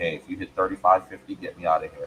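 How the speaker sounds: ordinary delivery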